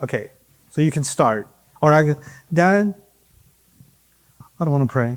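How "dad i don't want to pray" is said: put-on reluctant voice, lower pitch. Role-playing with a volunteer father: acting a son who won't pray. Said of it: "I'm gonna pretend to be a son who doesn't like to pray".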